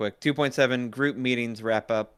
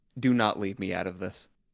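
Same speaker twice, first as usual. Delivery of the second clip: mock-serious, lower-pitched put-on voice; 2 semitones lower than usual. Telling the others about Kenzie's serious moment, imitating Kenzie's serious tone. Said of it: "We have Kenzie's serious moment".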